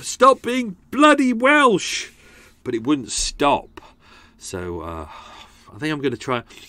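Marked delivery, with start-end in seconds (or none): 0.0-2.1 very high, drawn-out, acted-out shout. Recounting being stuck in a Welsh accent, retelling shouting at oneself. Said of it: "I kept shouting at myself".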